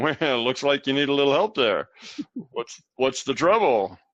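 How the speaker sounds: laying on heavy, mocking sarcasm. Showing the wrong way to offer someone help: sarcastic. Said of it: "not with sarcasm".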